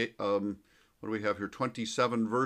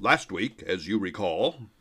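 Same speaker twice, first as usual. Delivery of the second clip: put-on deep, old-time radio narrator voice; 3 semitones lower, 4 dB louder than usual. Recalling the narrator's opening line from a favorite childhood tv show, deep radio narrator voice. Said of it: "with that deep radio voice".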